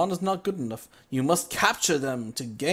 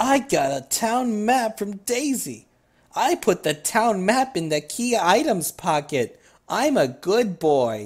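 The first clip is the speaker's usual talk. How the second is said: slow, mocking, sarcastic narration; 4 semitones higher, 4 dB louder than usual. Player reads the game's item text aloud; sarcastic reading. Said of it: "Sorry about the sarcasm".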